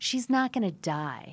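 play-acted, loud, drawn-out yell. Retelling what the partner said in the ambulance: imitating partner yelling. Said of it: "Like, yelled it".

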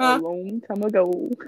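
deep, low, very slow, drawn-out godlike voice. Imitating how God would speak: Morgan Freeman voice. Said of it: "He be like".

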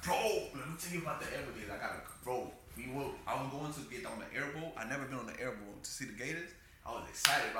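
ordinary talk, nothing marked

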